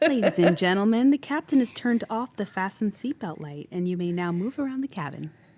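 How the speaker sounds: loud flight attendant public-address announcement voice. Showing co-hosts what flight attendants sound like, in a flight attendant announcement voice. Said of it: "I know what flight attendants sound like".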